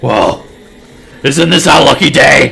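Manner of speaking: very loud, gleeful, high, rough demonic devil cackle. Voicing a one-armed devil spotting the party, laughing wickedly. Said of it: "He laughs wickedly and he blurts out".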